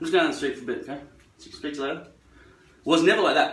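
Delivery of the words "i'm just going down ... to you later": put-on slurred mumble, words run together. Contrasting clear speech with a mumbled version: mumbled, words run together. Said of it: "Nothing mumbled, like".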